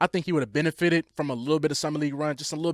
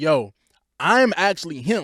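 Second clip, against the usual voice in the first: put-on bragging player voice, getting louder; 6 dB louder than usual. Retelling how Derek Queen is talking about his trade: imitating Derek Queen bragging. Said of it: "Derek Queen is talking like".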